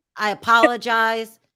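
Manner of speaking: ordinary talk, nothing marked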